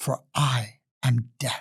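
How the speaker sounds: sibilant, hissing snake voice. Narrator reading a queen cobra speaking from a crack in the rock, hissing snake voice. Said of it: "the voice hissed".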